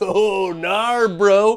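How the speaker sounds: put-on beach bro surfer dude voice. Reacting to a board game's title, the speaker does a surfer dude voice. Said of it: "this guy is about to shred some waves".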